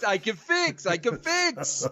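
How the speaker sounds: put-on French accent in English. A speaker retells what Francois said on the call, imitating Francois's French accent. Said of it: "he had a French accent".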